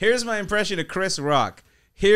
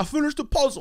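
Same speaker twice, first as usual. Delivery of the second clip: proud, triumphant, pitched-up voice, like a huge win; 8 semitones higher than usual. Doing a short impression of Tracy Morgan finishing a puzzle: Tracy Morgan impression. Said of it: "my Tracy Morgan one is".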